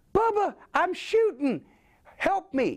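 very high, slow, stretched-out helium voice. Retelling being hurt and in shock: Pee Wee Herman on helium voice. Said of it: "suddenly I sound like Pee Wee Herman on Helium".

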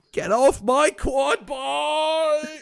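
put-on very high, very slow, terrible British accent. Doing a line in Cyanide's voice: imitating Cyanide's voice. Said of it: "That's just your standard terrible British accent".

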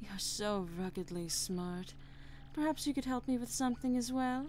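fawning, coquettish, flirtatious gushing tone. A train passenger praises the man who solved a mystery, flirtatious and gushing. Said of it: "you fine, fine specimen of a man, you. You're marvelous, dear".

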